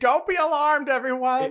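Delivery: very high, very loud, shrill, booming, drawn-out robot scream. Acting out the war machine shouting at wildlife: Peregrine Dynamo screaming. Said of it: "He's just screaming".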